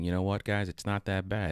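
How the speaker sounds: ordinary talk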